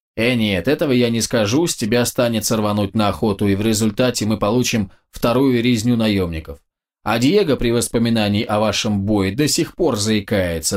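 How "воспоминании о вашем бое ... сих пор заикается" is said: ordinary delivery, nothing marked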